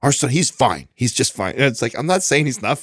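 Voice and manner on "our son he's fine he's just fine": touchy, defensive, protective tone. Retelling how Katrina reacts to his story: imitating Katrina getting defensive. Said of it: "she gets all defensive".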